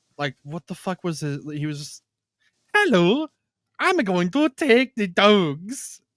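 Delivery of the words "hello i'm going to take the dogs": put-on muddled mix of South African, Scottish and Russian accents. Imitating a movie's eye-patched bad guy: a mixed South African-Scottish-Russian accent. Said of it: "like a South African, Scottish, Russian".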